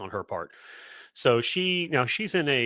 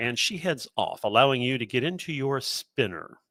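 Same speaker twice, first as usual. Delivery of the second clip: ordinary delivery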